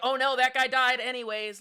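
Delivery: very loud careless dismissive tone. Speaker describes how Dracula acts in the film, imitating uncaring Dracula. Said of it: "he he's like".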